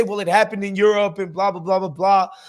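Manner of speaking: ordinary delivery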